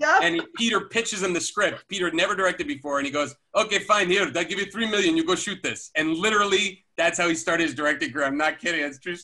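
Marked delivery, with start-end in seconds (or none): 3.5-5.9 put-on Israeli accent. Retelling how the man answered Peter's script pitch, in a big Israeli accent. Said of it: "He had a big Israeli accent".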